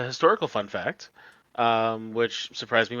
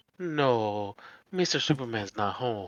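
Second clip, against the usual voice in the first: cartoon housekeeper voice with a drawn-out "no"; 4 dB quieter than usual. Speaker, asked to tone down a voice, does a Family Guy housekeeper impression. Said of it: "the uh, housekeeper from Family Guy".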